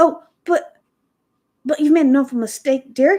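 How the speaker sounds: loud, halting, faltering, stumbling words. Reading a story aloud, the hired girl correcting a mistake: faltering. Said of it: "she faltered".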